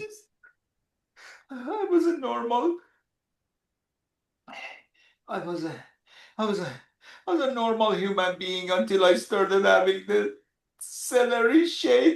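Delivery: very low voice, sobbing and crying through words. Speaking to the person who advertises the celery shake, crying while talking. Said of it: "because you're crying so much".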